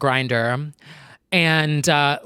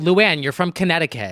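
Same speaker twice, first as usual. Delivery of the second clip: usual speaking voice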